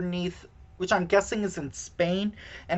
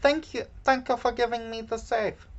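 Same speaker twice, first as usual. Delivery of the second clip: terrible put-on Israeli accent, spoken quickly; 5 semitones higher than usual. Retelling Gal Gadot's line once they get into the safe, in a terrible Gal Gadot accent. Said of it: "for my terrible accent".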